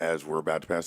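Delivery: normal talking voice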